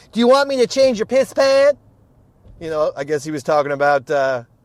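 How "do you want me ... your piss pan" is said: put-on Southern male voice, higher and louder. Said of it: "way more Southern".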